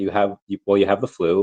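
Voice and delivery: ordinary talk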